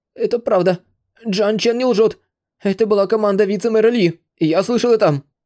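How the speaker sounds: quavering, trembling, very high-pitched voice. A thin, weak man, threatened with death, answers in a trembling voice. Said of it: "сказал дрожащим голосом".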